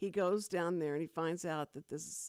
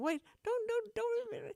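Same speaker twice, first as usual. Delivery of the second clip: very high, sobbing, crying voice. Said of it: "he is crying like a little girl".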